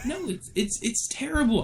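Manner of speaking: very high-pitched, agitated, worked-up voice. Answering someone who said calm down: worked up. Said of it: "I am getting so worked up over this".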